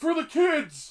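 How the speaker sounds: high, loud, slow call-out. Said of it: "someone come up with that bag and be like".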